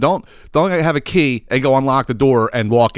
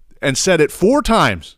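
normal talking voice

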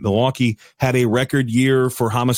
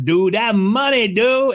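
put-on Cajun accent, much higher, slower; 11 semitones higher than usual. Describing a man who cooks giant pots of jambalaya, imitating a Cajun guy. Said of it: "he talked like this".

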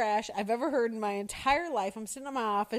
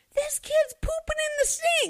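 mock young child hollering, shrill and high; 6 dB louder than usual. Retelling what one of the kids yelled near the boys' bathroom, imitating a kid yelling. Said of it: "I hear one of the kids yell".

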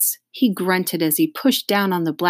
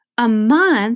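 shrill, loud exclamation thrown out sharply; 5 semitones higher, 5 dB louder than usual. Reading fiction, a character replies to another's encouragement, exclaiming. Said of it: "exclaimed Dee Dee".

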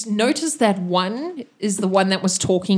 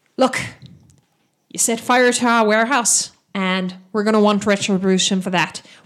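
put-on Irish-accented voice; 3 dB louder than usual. A game master voicing a character in an Irish accent. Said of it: "Irish. There we go".

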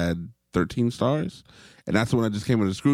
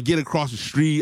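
mild half-shouted yell, pitched up; 6 semitones higher than usual. Retelling getting kids across the street in the rain: imitating own yelling. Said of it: "I'm yelling".

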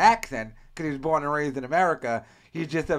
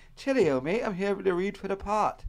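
put-on British or Australian accent; 5 semitones higher than usual. Describing a foreign actor walking into an audition, put-on british or australian accent. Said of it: "a British guy or an Australian guy walks into an audition".

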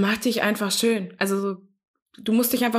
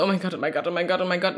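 acted-out panic, lower; 4 semitones lower than usual. Retelling own thoughts when arriving at a first date: imitating own brief panic. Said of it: "Aber währenddessen so kurz Panik".

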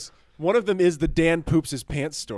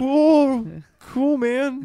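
put-on awkward voice, much higher, louder; 11 semitones higher, 6 dB louder than usual. Speaker imitates an old schoolmate who always talked like this: imitating an awkward classmate. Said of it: "He'd be like".

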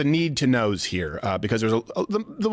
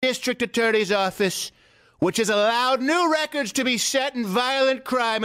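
higher-pitched, oratorical speech as if at a podium; 9 semitones higher than usual. Reading a post aloud as if at a podium: Donald Trump impression. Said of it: "as if he was at a podium".

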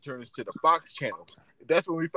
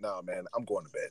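mock dejected, defeated, glum tone with all spirit gone; 8 semitones lower, 7 dB quieter than usual. Retelling a friend's reply after he turned off the game: imitating a dejected friend. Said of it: "Red was so dejected".

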